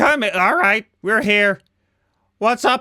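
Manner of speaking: light, mild called-out yell. Voicing a creature who calls the others in: screaming. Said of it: "so he screams".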